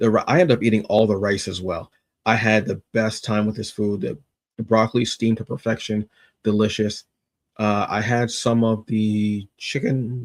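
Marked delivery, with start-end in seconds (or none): 9.6-10.2 voice cracking and breaking, very slow and drawn out. Describing a meal just eaten, the speaker's voice is cracking. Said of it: "I don't know why my voice just cracked".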